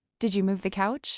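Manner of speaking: ordinary talk, nothing marked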